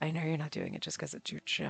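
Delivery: put-on seductive, sultry, very soft voice. Repeating a line that came out sounding sexy: sultry, sexy delivery. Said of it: "that came out sounding so ridiculously sexy and like sultry".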